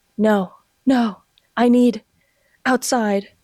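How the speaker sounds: put-on breathless gasping speech. Retelling what a woman said to guards who stopped her, imitating tangled, breathless words. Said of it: "The words were tangled. I couldn't breathe right".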